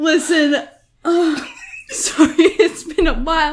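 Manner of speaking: high, giggly talk laughing through the words. Apologizing after laughing hard, still laughing while talking. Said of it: "I haven't laughed that hard".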